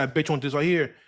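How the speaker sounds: ordinary talk, nothing marked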